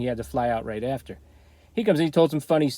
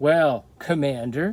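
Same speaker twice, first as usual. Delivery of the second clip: put-on snide, sarcastic, mocking tone. Retelling how a fan with a grand title got teased; retelling a sarcastic remark. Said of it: "like in a sarcastic way".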